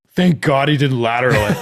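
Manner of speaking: loud shouting yell. Retelling watching a play with a friend: imitating yelling out loud. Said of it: "I yell out loud".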